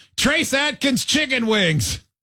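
high yell blurted out at the top of the lungs. Recounting how their dad yelled out during an interview, retelling dad's yell. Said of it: "at the top of his young lungs, yelled".

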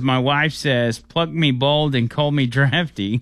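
normal talking voice

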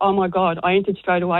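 ordinary delivery

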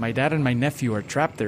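ordinary talk, nothing marked

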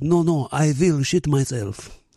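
put-on French accent. Retelling a player's reply to the umpire, in a french accent. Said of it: "in his French voice".

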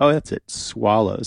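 normal talking voice

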